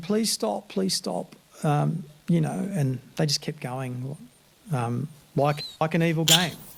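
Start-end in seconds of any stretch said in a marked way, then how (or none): 0.0-1.4 put-on high, pleading, begging voice. Retelling how a handcuffed prisoner begged while being kicked: imitating someone pleading. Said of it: "he was pleading".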